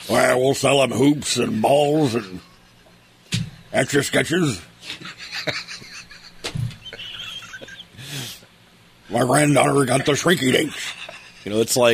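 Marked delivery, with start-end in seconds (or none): 0.1-10.9 put-on voice of an old corporate businessman. Mocking old men running a toy store: Richard Nixon voice. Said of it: "I've never heard you do that voice".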